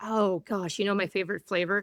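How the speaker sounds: ordinary talk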